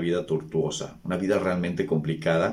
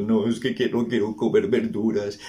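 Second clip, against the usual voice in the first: mock whining, tearful, on the edge of crying; 4 semitones higher than usual. Retelling how the son, almost crying, refused vegetables: imitating a child almost crying. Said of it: "Casi llorando, como diciendo".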